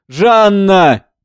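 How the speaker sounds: pleading, imploring tone. A man calls after a woman who ran off, pleading. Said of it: "умоляюще".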